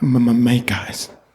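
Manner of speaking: mock nervous stammering. Mocking how the other speaker just said a line: imitating a nervous stammer. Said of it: "He, he said".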